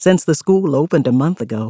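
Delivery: ordinary delivery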